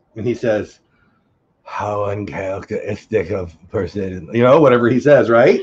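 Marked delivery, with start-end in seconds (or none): 1.7-4.3 scary, creepy, low, slow character voice. Retelling a scene from the show, imitating the creepy guy. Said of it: "that was the perfect imitation".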